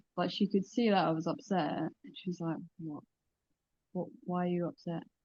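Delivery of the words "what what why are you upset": mock impatient, irritated, soft, annoyed tone. The speaker retells what a woman asked on seeing her upset, mock-annoyed. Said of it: "she just looked so annoyed".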